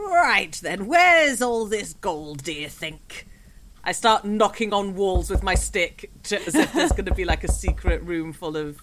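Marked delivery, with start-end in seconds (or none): 0.0-3.3 grumpy ancient vampire voice, slower. A tabletop player in character as an ancient vampire, grumpy ancient vampire voice. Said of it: "And they are an ancient vampire who is very grumpy all the time and likes gold".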